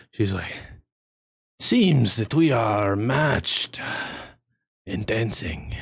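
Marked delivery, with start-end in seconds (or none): 1.6-5.7 heavy breathing, out of breath. Voicing a character who just finished dancing: heavy breathing. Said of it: "she looks at you all heavy breathing".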